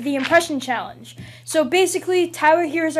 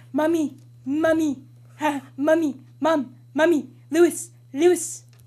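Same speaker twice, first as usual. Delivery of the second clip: put-on cartoon baby voice, calling out; 3 dB quieter than usual. Taking a turn in a voice game, the speaker gives a Stewie Griffin impression. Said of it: "That's all I can do for Stewie".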